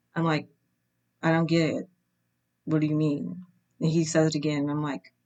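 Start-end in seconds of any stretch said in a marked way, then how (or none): 1.2-3.4 stern, flat voice. Retelling not getting a man's joke about liking a comment, retelling in stern flat tone. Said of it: "stern, flat tone of my voice".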